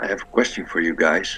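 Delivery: quiet, hushed voice. Retelling a question asked before bed, hoping someone won't overhear, in a lowered quiet voice. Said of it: "I lower my voice so that I hope that Bowen doesn't hear".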